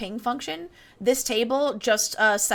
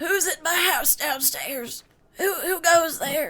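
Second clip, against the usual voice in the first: put-on high, crotchety, cranky old man voice; 6 semitones higher than usual. Retelling what a voice from downstairs called out, in a crotchety old man voice. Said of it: "in like the most quintessential crotchety old man voice".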